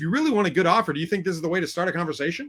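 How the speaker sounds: put-on confrontational, challenging voice. Retelling a sales call with a seller: retelling own aggressive tone. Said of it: "I kinda got aggressive with him".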